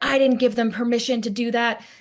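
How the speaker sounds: screaming. Retelling how a neighbor yelled at the people next door: imitating someone screaming. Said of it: "She starts screaming at them and she's like".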